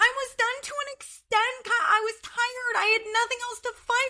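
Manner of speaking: fake squeaky woman's voice. Retelling what Amanda said in reply to Kyle, Amanda's squeaky, annoying voice. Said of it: "in her squeaky, annoying, fucking voice".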